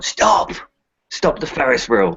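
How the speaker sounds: high, called-out delivery in a character voice. Playing a character at the top of a ferris wheel: shouting in character. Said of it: "He'll shout".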